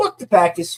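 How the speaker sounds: put-on Boston accent. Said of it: "like how he says it in like a Boston accent".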